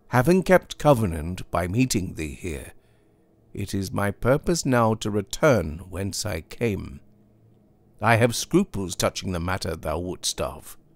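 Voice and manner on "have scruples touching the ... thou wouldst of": ordinary delivery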